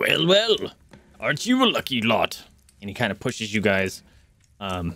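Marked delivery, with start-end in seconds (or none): 0.0-2.4 dwarf tavern-keeper character voice. Voicing a barkeep who serves drinks to the players: dwarven barkeep voice. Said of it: "the dwarven barkeep, uh, he's like".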